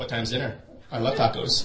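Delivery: put-on deadpan, flat delivery. Quoting her funny line, imitating someone deadpan. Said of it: "She says it in a really deadpan way. ... More like that tone".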